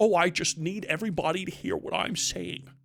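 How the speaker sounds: very bad, fake put-on American accent. Describing Christopher Eccleston in a role, Christopher Eccleston's bad American accent. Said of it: "putting on the worst English American accent you've ever heard".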